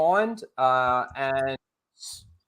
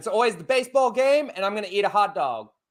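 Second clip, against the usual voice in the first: fake American accent, pitched up; 7 semitones higher than usual. Showing their go-to line when asked for an american accent: put-on american accent. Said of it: "do do an American accent".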